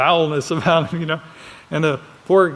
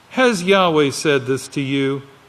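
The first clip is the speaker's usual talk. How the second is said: ordinary talk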